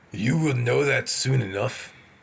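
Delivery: gruff voice. A man replies to the narrator's polite question, in a gruff voice. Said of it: "replied a man in a gruff voice".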